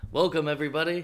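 shouting. Opening the podcast episode with a greeting: yelling. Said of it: "you just decided to yell".

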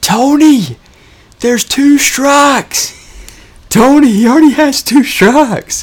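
mock very high, loud, stretched-out holler. Retelling what a fan in the stands shouted: imitating a fan yelling. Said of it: "he's yelling".

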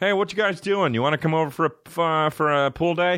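mock bad-sounding voice. Complaining about bad voices, the speaker acts out such a guy: put-on shitty voice. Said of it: "would talk like this".

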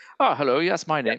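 put-on charming, old-world British accent. Praising actor Tim Roth, the speaker mimics how he talks: Tim Roth British accent. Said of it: "kind of charming old world British".

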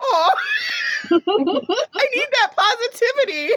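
very high, laughing, gushing aw.

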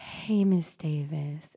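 very soft, near-whispered, breathy therapist voice. Speaker imitates her therapist greeting her, imitating therapist's breathy voice. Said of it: "It's so breathy and like".

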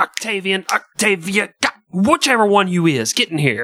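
mock slow, drawn-out, high-pitched parent yell. Acting out a parent calling the kids into the room: parent yelling at kids. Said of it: "you never know which one you're yelling at".

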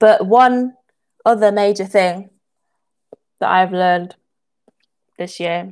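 speaking with mouth full. Speaker talking to listeners about what they learned this year, talking while chewing. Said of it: "sorry about the chewing again".

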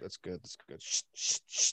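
soft ASMR-like mutter. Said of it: "mumbling to yourself".

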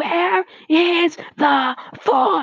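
long, high-pitched shout. She yells her question at an angry shelter employee: yelling. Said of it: "Yelled Leslie".

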